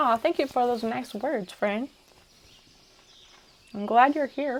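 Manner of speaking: talking while chewing. Replying to a listener's message on the show, talking while chewing. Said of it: "Sorry about the chewing sounds".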